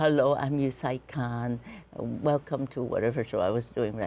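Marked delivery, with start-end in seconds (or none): 0.0-2.8 mock very serious presenter-style tone. Retelling an old documentary opening: imitating own very serious presenter intro. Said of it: "Very serious, very, very serious".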